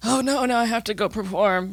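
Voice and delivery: put-on elderly old man voice. Imitating a nervous future self who must perform: old man voice. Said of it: "that's my old man voice".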